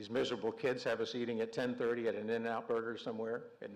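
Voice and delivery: ordinary talk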